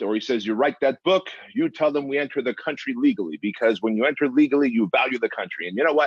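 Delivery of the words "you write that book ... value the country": put-on Russian accent with Armenian flavor. Quoting dad's advice about entering the country legally: imitating a heavy Armenian Russian accent. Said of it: "he's got a heavy, uh, Armenian Russian accent".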